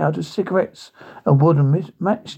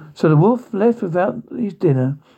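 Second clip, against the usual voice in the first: plain reading voice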